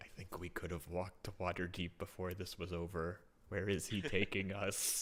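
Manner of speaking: barely audible, very quiet hushed whisper. A player's character walks up to Marathi and speaks, whispering very quietly. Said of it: "whisper to him very quietly".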